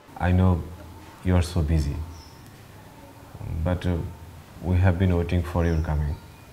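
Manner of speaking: low, slow pleading voice.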